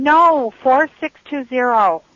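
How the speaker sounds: screaming. Correcting a number someone repeated back to them, screaming. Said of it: "Please don't scream at me".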